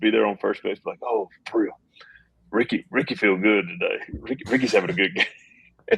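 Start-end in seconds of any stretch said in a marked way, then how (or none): 1.0-6.0 comic, chattered-out delivery. Retelling how Ricky chattered on first base: imitating Ricky on first base. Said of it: "He was like".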